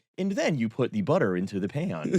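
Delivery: synthetic video narrator voice. Showing how another speaker sounds, do the AI slop cooking video voice. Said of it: "You're doing the A I slop video voice".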